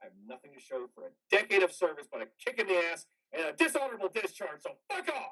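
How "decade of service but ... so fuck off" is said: furious, raging screaming rant, climbing higher. Laying bricks as Specialist Martinez approaches, screaming in rage. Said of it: "You're fucking screaming your head off".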